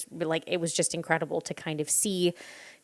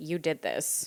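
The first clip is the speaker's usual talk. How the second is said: acted, coolly calm, composed, matter-of-fact delivery. Retelling the agent's words to the viewer: imitating a very calm delivery. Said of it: "very calmly being like".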